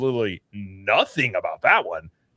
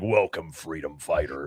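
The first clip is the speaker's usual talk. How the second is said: heroic robot leader voice, much lower pitch; 7 semitones lower, 6 dB quieter than usual. Imagining a ride voiced by Peter Cullen, doing the Optimus Prime voice. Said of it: "that is the voice of Optimus Prime".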